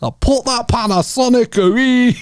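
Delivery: put-on very high, slow, scolding Scottish accent. Imitating how a friend sounds, imitating Mikey in a Scottish accent. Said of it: "that's what Mikey sounds like".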